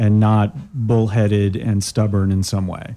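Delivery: sarcastic, mock-sincere praising tone.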